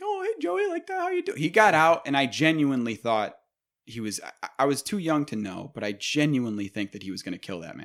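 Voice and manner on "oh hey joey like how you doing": super happy-go-lucky, very high voice. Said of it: "super fucking happy-go-lucky".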